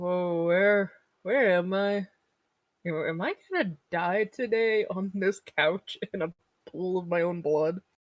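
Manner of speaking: woozy, loopy, dazed, out-of-it speech. Speaker retells slowly losing blood on the couch, imitating loopy, dazed speech. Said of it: "I was getting very loopy".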